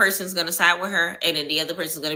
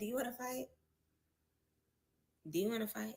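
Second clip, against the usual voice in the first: very soft, very quiet, utterly calm, challenging tone; 5 semitones higher, 17 dB quieter than usual. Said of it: "That is the calmest tone I have ever heard".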